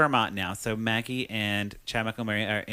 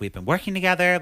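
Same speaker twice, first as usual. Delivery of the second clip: mock fed-up, mad, high, loud angry outburst; 8 semitones higher, 5 dB louder than usual. Retelling a movie scene where a character hears upsetting news: imitating someone angry. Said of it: "she got so mad 'cause she's like".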